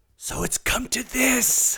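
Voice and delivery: whispered speech. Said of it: "Gotta do the whisper".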